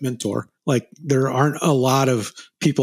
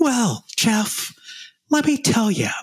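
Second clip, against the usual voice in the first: very high, slow, swooping, unhurried sing-song drawl; 10 semitones higher than usual. Retelling a question asked in a noisy diner: quiet, slightly high Jack imitation. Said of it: "that's my Jack imitation".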